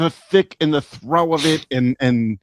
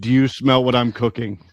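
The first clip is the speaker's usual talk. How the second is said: ordinary talk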